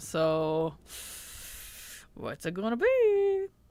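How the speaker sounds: ordinary talk, nothing marked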